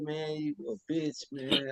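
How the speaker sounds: very quiet, slow, drawn-out flat deadpan, no emphasis. Explaining you need emphasis when you mean it, showing it said flat with no emphasis. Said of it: "I can't just say".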